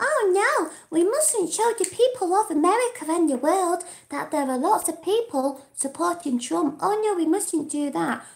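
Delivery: high, taunting, mocking baby-talk voice. Speaker mocks the mainstream media in a mocking baby voice. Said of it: "I keep doing that baby voice".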